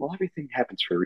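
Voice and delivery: soft, hushed, eerily very calm murmur. Describing how a creepy man says his line: imitating a very calm voice. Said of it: "He's like very calm".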